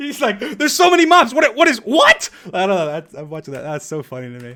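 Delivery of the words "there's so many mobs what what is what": high, loud, confused, bewildered panicked yelp. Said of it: "Just the way he says that is so funny".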